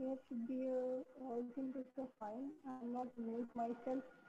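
quite soft speech.

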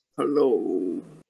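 very low, deep, rumbling grumble. Voicing a huge dog character greeting two strangers: deep grumbly voice. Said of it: "the deep grumbly".

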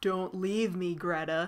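put-on creepy child voice, slow. Recounting a story's plot and acting out its character's line, Brahms's creepy kid voice. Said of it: "does this creepy kid's voice".

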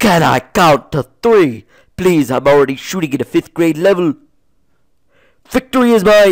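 high-pitched animated-sitcom cartoon character voice.

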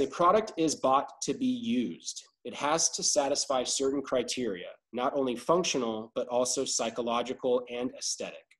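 normal talking voice

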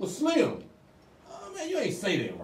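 put-on high, excited old head voice. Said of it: "they be like".

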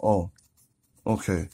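barely audible, very soft, shy mumble. Recalling being hit on, answering by mumbling like shy past self. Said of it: "I was just mumbling like".

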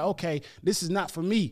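ordinary delivery

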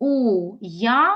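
very slow, syllable-by-syllable уявити. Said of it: "не три, а чотири склади".

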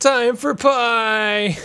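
screaming battle cry. Describing warriors rushing into battle: screaming a battle cry. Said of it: "They rush into battle just screaming".

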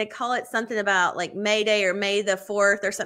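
normal talking voice

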